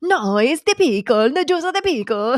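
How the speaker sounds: animated Italian accent. After being asked to speak in an animated italian accent, say the line that way. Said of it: "start speaking in an Italian accent and be like really animated".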